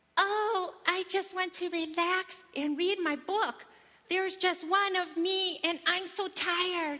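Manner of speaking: very high, slow put-on mother voice. Retelling her child pretending to be her, in a high voice imitating mommy. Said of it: "he says in a high voice".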